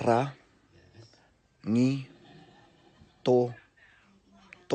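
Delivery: very slow and drawn out, each syllable set apart. Teaching a place name, asking listeners to repeat after: syllable by syllable. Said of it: "so repeat after me".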